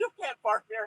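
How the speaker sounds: high, called-out yell. Recalling what people in videos shout at drivers: retelling a yell. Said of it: "yelled, yeah".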